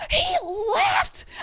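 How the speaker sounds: high, astonished tone.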